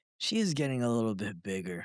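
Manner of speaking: low, play-acted, slightly disdainful tone. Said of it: "with a little bit of, like, disdain".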